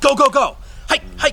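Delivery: very high, amped-up, excited high-pitched voice. Cueing dogs to go or hike, excited amped-up commands. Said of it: "there's going to be a lot of excitement in it".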